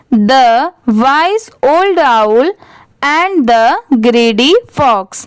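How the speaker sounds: very slow, each word separate, word-by-word. Teacher reads a sentence for learners to repeat, slow, one word at a time. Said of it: "ऐसे धीरे धीरे आप पढ़ने की कोशिश करिए".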